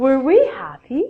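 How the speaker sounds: pitch climbs on happy, like a question. Teaching english questions with were: rising intonation on happy. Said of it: "at the end of a question in English, it's a rising intonation".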